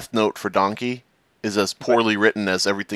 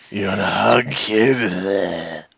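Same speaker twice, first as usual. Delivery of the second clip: put-on sick, creepy guy voice, "kid" drawn out. Joining a bit about hugging people in creepy voices, very creepy voice. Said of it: "talk about hugging people in very creepy voices".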